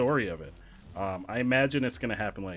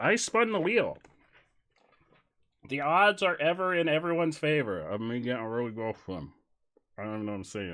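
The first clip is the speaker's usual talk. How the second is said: mouth full while talking, higher pitch; 3 semitones higher than usual. Eating flavors from a spun wheel, talking with mouth full. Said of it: "talking with my mouth full".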